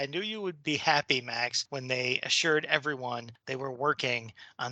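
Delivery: ordinary delivery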